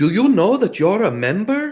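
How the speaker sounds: put-on faint, very high Spanish accent. Retelling what a rental desk agent said: imitating a slight Spanish accent. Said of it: "she had a little bit of a Spanish accent".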